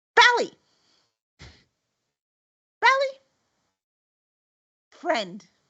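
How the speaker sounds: very high, squawking raven-like bird voice. Voicing a trained raven that speaks on cue: raven voice. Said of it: "and the raven goes".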